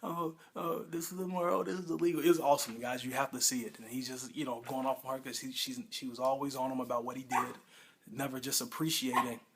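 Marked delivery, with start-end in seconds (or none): 0.0-2.2 higher-pitched, mocking, whiny moan. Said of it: "All you do is moan".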